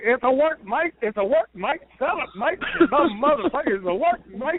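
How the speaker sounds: high, mock shouting scream through laughter. Retelling a wrestler who chased him in the ring: imitating someone screaming while laughing. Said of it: "he's laughing his ass off, screaming".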